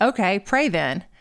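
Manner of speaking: plain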